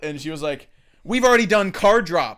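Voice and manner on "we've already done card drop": very loud, high, carrying voice. Retelling what a server in a movie theater said: imitating a woman talking loud. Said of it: "she talked loud as fuck".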